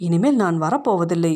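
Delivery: ordinary delivery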